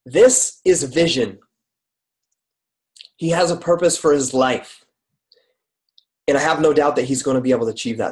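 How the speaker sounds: tearing up. Reading a message aloud for the first time, tearing up. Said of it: "This is like making me tear up".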